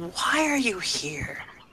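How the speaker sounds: very slow, drawn-out half-whisper. Playing a character who opens a backpack and speaks into it: half-whispering. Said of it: "whisper into it".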